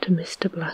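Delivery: plain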